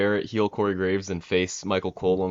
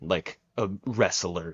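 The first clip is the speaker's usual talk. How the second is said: a in a wrestler stressed and drawn out slowly. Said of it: "Greco-Roman grappling".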